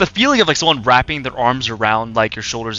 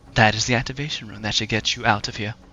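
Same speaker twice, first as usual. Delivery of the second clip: soft, hushed half-whisper, kept low; 3 semitones lower, 7 dB quieter than usual. Voicing a character who tells the players how to escape: Miranda half-whispering. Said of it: "Miranda whisper".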